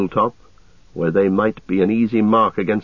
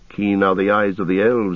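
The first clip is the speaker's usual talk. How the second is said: plain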